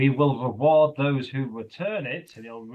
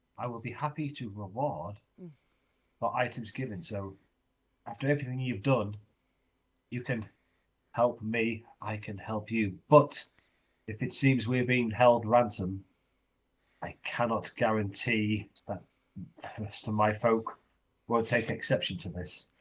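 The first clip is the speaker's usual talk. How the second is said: hushed whisper, much quieter and lower; 3 semitones lower, 4 dB quieter than usual. A character speaks so no one else hears, whispering. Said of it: "he's whispering so no one else hears".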